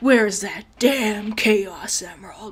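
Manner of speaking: slow, drawn-out, try-hard edgy delivery. Mocking a game character's lines as edgy: mocking Shadow the Hedgehog voice. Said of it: "It sounds like Shadow the fucking Hedgehog".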